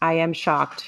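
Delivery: plain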